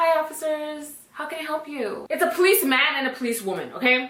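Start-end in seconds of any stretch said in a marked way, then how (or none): 0.0-2.1 fake, trying-to-sound-sober voice, kept soft. Retelling answering the door to two police officers, fake sober voice. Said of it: "I put on my best sober voice".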